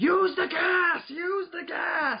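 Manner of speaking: put-on shrill, slow, vehement scream, very high. Retelling how King Kai screams at Gogeta: imitating King Kai screaming. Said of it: "vehemently King Kai is just screaming at Gogeta".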